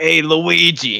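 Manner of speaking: full, thick Brooklyn accent. Suggesting how Mario should sound, thick Brooklyn Mario voice. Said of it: "Yeah, like that, like that".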